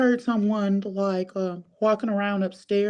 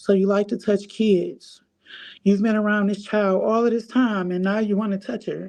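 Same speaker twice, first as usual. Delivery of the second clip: ordinary delivery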